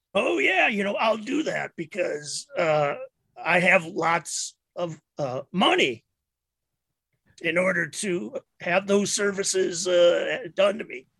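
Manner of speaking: sounds like a hobo. In a role-play, answering an offer to have doctors fix his throat, hobo-like voice. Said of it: "my voice sounds a little like a hobo's".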